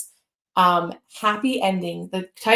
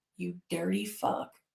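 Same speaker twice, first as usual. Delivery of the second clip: mock-nasty, dry, sarcastic delivery; 11 dB quieter than usual. Retelling what was said when someone did something disliked: retelling a sarcastic insult. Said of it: "The way I sarcastically".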